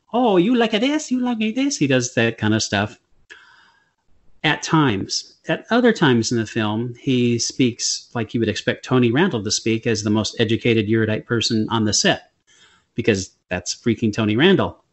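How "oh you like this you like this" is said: put-on very thick pidgin accent, pitched very high. Describing an actor's performance in a film, demonstrate Tony Randall's very thick pidgin accent. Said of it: "he does put on a very thick pidgin accent".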